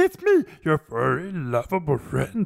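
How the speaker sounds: high, sedated, swooping furry monster voice. Speaker imitates Grover as if on Quaaludes, in a mock-sedated Grover voice. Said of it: "Just put Grover on Quaaludes".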